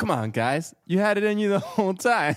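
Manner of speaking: flat delivery with zero emotion. Imitating Michael Jordan's motivational speech: emotionless Michael Jordan impression. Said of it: "Were you just like".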